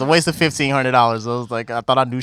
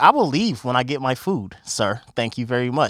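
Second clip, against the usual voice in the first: play-acted, excessively polite, courteous tone. Retelling answering an angry restaurant owner: imitating own overly polite reply. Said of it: "I'm being mad polite to him".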